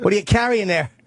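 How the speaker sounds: terrible, exaggerated, put-on Boston accent. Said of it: "Terrible Boston accent".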